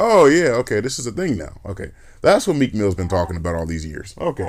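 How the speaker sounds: ordinary talk, nothing marked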